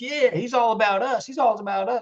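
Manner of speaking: high-pitched, put-on Southern accent. Mocking how he keeps Republicans on his side, Southern accent. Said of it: "I'm sorry to do the Southern accent".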